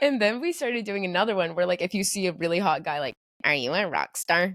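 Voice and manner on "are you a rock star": dry, toneless, slow, flat deadpan. Recounting a running joke with a friend, she demonstrates the question in a deadpan voice. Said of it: "we'll do this in this like really like deadpan voice".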